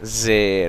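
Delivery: falling pitch downward on जेर. Explaining how to say zer by lowering the voice: falling pitch on जेर. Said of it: "ये हमारी आवाज जो है नीचे गिर रही है".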